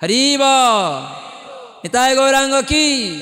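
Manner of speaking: fervent, earnest call-out.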